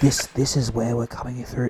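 put-on whisper. Speaker retells what a man on a live stream said, imitating a whisper. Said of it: "he's whispering".

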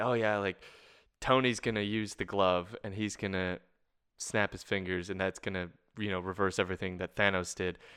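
plain

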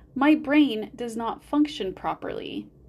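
ordinary delivery

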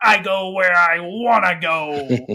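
very slow, loud growly voice, "go" stretched out. Recommending a show, quoting Wolverine in a growly Wolverine voice. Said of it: "He's got this real growly voice".

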